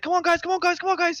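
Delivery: high-pitched, urging, called out. Voicing Blake at the front of the wagon, calling the party: voicing Blake urging the party. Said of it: "He's like".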